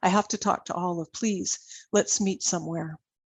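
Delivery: plain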